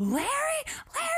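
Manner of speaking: play-acted, very high, desperate screaming. Retell Carol calling Larry over the CB radio, imitating Carol screaming. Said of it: "poor Carol screams into the radio like".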